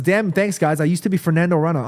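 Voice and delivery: ordinary talk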